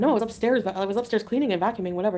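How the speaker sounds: ordinary delivery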